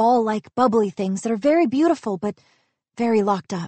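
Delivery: ordinary delivery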